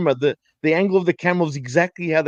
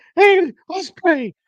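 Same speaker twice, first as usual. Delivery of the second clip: grating, shrill, very high-pitched voice; 14 semitones higher, 5 dB louder than usual. Complaining about a man whose voice annoys him, imitating a high-pitched voice. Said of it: "he's got a high pitched voice".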